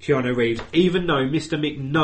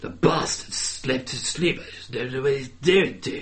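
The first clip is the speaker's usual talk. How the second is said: awful, terrible, fake British accent. Going over a quiz answer about Keanu Reeves as Dracula, doing his awful British accent. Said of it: "his fucking awful British accent".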